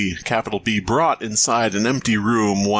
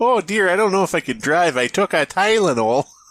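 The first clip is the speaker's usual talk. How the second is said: put-on Minnesotan soccer-mom accent; 7 semitones higher than usual. Joking about migraine medication, like a Minnesotan soccer mom. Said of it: "like a Minnesotan soccer mom".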